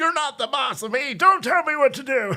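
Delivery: very high, put-on old-timer voice. Ad-libbing a man refusing police orders to leave: imitating an old man voice. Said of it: "he probably doesn't talk like that, like an old man".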